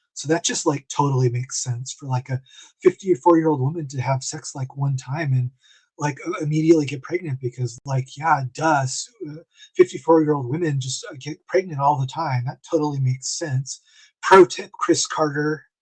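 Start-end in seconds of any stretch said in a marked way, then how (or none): none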